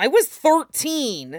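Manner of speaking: protesting, on the back foot. Asked dryly about an old girlfriend, the speaker answers, defensive. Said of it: "Lee said defensively".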